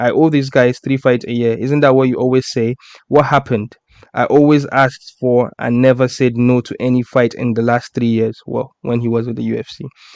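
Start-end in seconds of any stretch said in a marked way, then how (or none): none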